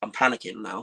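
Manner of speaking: ordinary talk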